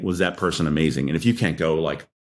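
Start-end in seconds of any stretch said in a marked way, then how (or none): none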